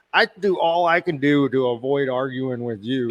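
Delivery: ordinary delivery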